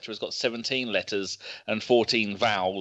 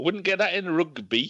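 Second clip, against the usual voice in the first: fake Scottish accent, higher; 8 semitones higher than usual. Reading out a caller's message: put-on scottish accent. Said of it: "That's my Scottish".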